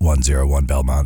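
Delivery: very low, deep police radio voice. Trying it again for the others, in a police radio voice. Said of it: "There you go".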